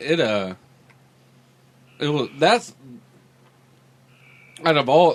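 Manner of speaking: talking with mouth full, chewing. Mid-conversation, eating a chicken finger, talking with mouth full. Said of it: "I got a mouthful of cack, chicken finger".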